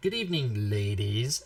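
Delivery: weird, low, creepy stage voice. Performer recalls greeting the audience on stage: weird creepy voice. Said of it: "I said it in a weird creepy voice".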